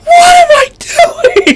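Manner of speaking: mock screamed speech. Describing a show episode, the speaker acts out a character's line, retelling a scream. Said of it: "Like he screams it".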